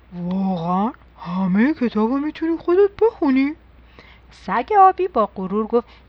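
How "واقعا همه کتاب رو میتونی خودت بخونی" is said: astonished, disbelieving, surprised tone with rising pitch. Narrator reads the bear asking the blue dog a question, surprised. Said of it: "با تعجب گفت".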